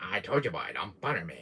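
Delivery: very low character voice with swooping pitch. Showing an impression of a game character: Albert Wesker voice. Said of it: "Here is my iconic Albert Wesker".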